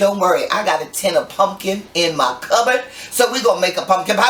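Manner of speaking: ordinary delivery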